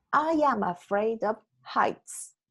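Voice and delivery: ordinary talk, nothing marked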